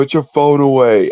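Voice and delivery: high, loud, top-of-the-lungs yell. Telling a story about riding the Powder Keg, retelling a yell. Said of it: "at the top of our lungs".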